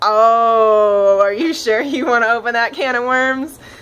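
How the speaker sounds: loud teasing, knowing tone stressed on "oh".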